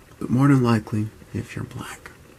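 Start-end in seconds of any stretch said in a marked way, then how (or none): 1.4-2.1 hushed whisper. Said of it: "I'm whispering today".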